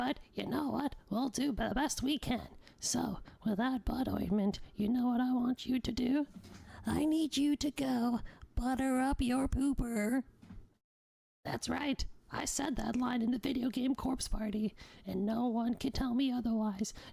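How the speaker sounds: hushed whisper. Speaking to listeners going to sleep, whispering. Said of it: "It's very hard to whisper in this voice".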